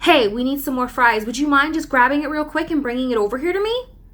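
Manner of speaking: quick, courteous, polite and friendly. Showing how to ask coworkers nicely for something, polite nice tone. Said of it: "Doesn't that sound nice?".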